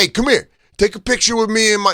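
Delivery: high, hollering yell. Retelling how a fan yelled at Sal for a picture: imitating a fan yelling. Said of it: "watch Sal get yelled at".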